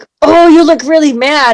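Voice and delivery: loud, growling, angry-sounding voice. Showing how to say a line to a child: growly voice. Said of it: "you've got your growly voice".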